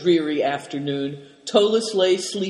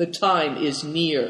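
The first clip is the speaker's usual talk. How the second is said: plain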